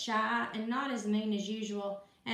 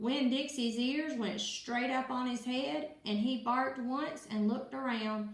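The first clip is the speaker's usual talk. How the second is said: plain reading voice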